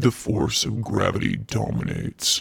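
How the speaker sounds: deep voice. Asked by a friend to say a line, the speaker says it sounding like Kylo Ren. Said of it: "You sound like Kylo Ren".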